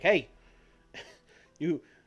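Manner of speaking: high-pitched, angry yell, shouting over. Describing how a man will come out and start on another man, acting out someone yelling. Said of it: "he's just gonna start yelling and be like".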